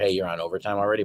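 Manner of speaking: normal talking voice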